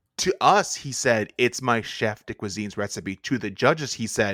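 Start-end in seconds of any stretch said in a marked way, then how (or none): none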